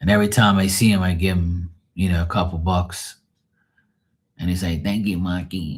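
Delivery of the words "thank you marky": gummy, toothless-sounding voice, grateful tone. Retelling how a man he knows greets him: imitating Max's voice. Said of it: "I do his voice".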